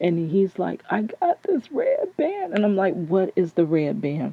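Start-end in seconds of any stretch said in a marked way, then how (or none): 0.9-2.5 acted, very high, wavering voice sobbing through tears. Quoting what a man said to her while he was crying: imitating someone crying. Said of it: "because he's crying".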